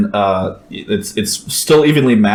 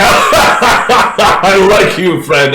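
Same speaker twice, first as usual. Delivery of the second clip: hearty belly-laughing speech, loud, slow, very drawn-out; 11 semitones higher, 5 dB louder than usual. Retelling a guy who laughed after being kissed on both cheeks: retelling a giant belly laugh. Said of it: "he just giant belly laugh".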